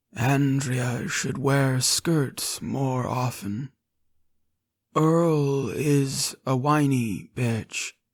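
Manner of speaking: empty-sounding voice. Reading a story aloud, voicing a chained man: hollow voice. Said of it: "he says in a hollow voice".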